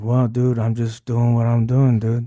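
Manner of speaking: really slow, drawn-out talk. Describing a best friend who teaches math, imitating how he talks: Stoney's slow talk. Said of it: "and he talks like this".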